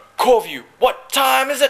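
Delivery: pumped-up, very high hype call. Showing a motivational call used on the boat: motivational boat call. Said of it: "calls we have on the boat".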